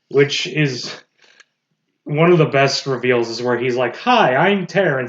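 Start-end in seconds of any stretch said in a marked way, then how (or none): 3.9-5.0 sweet, friendly, really nice, light and high voice. Retelling a cartoon reveal scene: imitating Terrence, really nice. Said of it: "and he's really nice".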